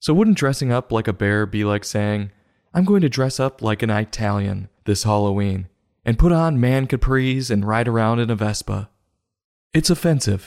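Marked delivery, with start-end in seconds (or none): none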